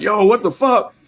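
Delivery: screaming at a very high, shrill pitch. Retelling watching a scary scene with others: retelling their own yelling. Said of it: "we in here yelling, screaming".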